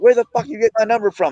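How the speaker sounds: mock furious, angry shouted yelling. Host recounting a phone call where T.O. yelled at him, retelling T.O. yelling. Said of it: "instead of yelling at me".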